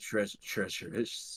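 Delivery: put-on dying character voice. Imitating a dying game NPC sitting against a wall: Dark Souls NPC voice. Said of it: "make myself sound like a fucking Dark Souls N P C".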